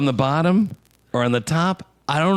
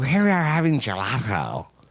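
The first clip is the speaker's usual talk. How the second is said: weird little put-on lisp through every s. Describing a woman with a weird little lisp: Drew Barrymore impression, lisping. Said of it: "she's got like a weird little lisp or whatever. She's like, ... That's a pretty good Drew Barrymore impression".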